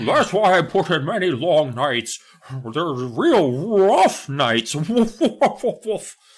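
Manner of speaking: high, drawn-out dog professor character voice with woofing. Speaker tries out a voice for a dog character, a dog professor voice. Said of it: "He's like a dog professor. That's kind of the voice".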